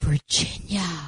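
put-on childlike whisper. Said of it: "grammar schoolish whispering voice says".

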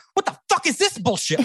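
outraged, incensed rant, very high-pitched. Retelling a furious call to a radio station: imitating someone yelling angrily. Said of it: "I called in a fervor, like, incensed".

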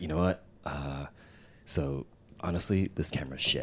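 put-on whisper. At CES, retelling a guy calling him into his trailer corner: imitating a whisper. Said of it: "why are you whispering and telling me to come into the corner".

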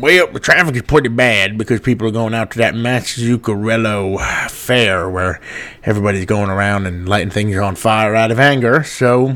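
put-on atrocious, butchered Cajun accent. Traffic chopper reporter answering the anchor about Route 5: Bill Whirly Bird Johnson, Cajun accent. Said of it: "Your Cajun accent is atrocious".

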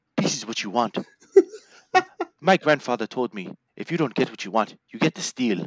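put-on Nigerian-accented wrestler voice. Retelling what a wrestler said in a match: imitating Apollo Crews's Nigerian accent. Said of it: "every time he spoke".

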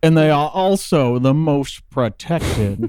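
slow, unhurried, stretched-out politician voice. Reading a found quote aloud in the voice of Jim Justice: Jim Justice voice. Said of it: "I'll say it in Jim Justice's voice".

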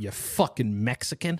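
mock emphatic tone. Imitating racist people, who love emphasis: imitating a racist, emphatic. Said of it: "racist people love emphasis".

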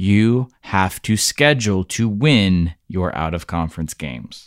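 very slow, deliberate delivery, word by word. Making a point about scheduling to Bud: saying it real slow. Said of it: "I'm gonna say it real slow".

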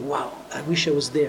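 ordinary talk

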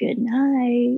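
put-on creepy male voice. Retelling a ghostly voice heard at bedtime: imitating a creepy man's voice. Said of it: "it's a creepy man's voice going".

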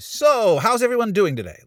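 mock very high, loud, booming, overeager tone. Speaker retells walking into a room alone and greeting everyone, retelling a loud greeting. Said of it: "I just come in like loud voice".

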